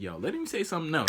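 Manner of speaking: ordinary talk, nothing marked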